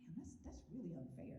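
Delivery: plain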